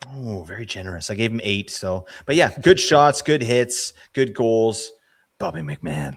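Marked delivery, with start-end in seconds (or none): 2.6-6.2 loud, commercial-style announcer delivery. Comparing player ratings with another speaker, sounding like a commercial. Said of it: "That sounded like a commercial".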